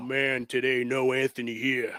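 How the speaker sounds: put-on manly voice. Podcast host opening an episode and introducing a guest, Ving Rhames voice. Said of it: "That's my man voice".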